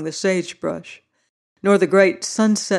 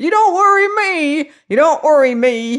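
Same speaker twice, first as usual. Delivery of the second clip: very high-pitched, loud, shrieking scream; 10 semitones higher, 6 dB louder than usual. Uncle Huey replies to the other speaker's question, screaming. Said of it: "now screamed Uncle Huey".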